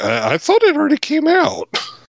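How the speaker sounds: high, hot voice. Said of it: "I talked in a hot voice".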